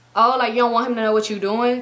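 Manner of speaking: ordinary talk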